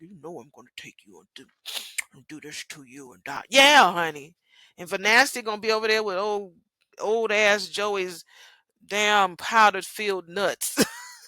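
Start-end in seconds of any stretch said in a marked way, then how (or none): 0.0-3.5 low, very quiet, soft murmur. Imagining what Doug will say to June: voicing Doug. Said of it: "Doug is gonna be like".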